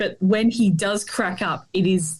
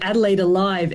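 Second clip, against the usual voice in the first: usual speaking voice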